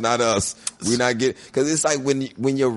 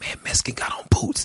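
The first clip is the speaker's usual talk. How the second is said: breathy, barely voiced whisper; 3 dB quieter than usual. Retelling asking someone what a strange remark meant: imitating own whisper. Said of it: "I whispered to Mitch".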